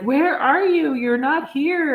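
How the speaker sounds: put-on pleading voice on the edge of tears. Retelling a phone call from her mother: imitating her mother almost crying. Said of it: "she was almost crying".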